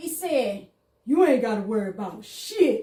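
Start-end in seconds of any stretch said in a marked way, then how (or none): 1.1-2.8 very loud, suddenly dropped deep voice. Retelling what he said when a man was talking shit: imitating a voice gone deep. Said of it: "His voice got deep".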